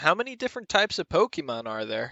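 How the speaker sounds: ordinary talk, nothing marked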